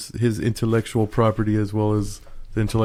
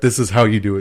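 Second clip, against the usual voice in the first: put-on stern voice, louder; 4 dB louder than usual. Retelling how Matt Hardy addressed the crowd: imitating Matt Hardy sternly. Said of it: "Matt Hardy sternly".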